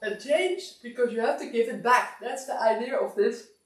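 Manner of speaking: words stretched out through a yawn. Explaining the exercise to listeners after a timer change, yawning while speaking. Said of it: "Sorry, I'm yawning".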